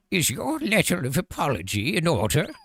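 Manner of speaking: put-on high-pitched old lady voice. Asked for their best old lady impression, playing along in an old lady voice. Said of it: "Give me a best old lady impression".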